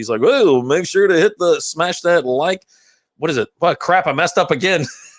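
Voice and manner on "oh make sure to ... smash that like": on-air radio announcer voice. Acting out how a colleague talks on air, doing the radio voice. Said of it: "He does the radio voice".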